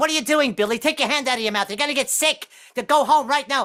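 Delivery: high-pitched, nagging, scolding voice. Acting out an imagined mother scolding her son: scolding mother voice. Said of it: "I'm just imagining the guy's mother behind him".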